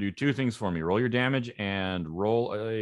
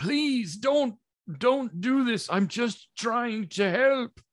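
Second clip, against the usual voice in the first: very high hollering, calling out; 3 dB louder than usual. Narrator voicing a character who is being attacked, hollering out. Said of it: "he hollers out".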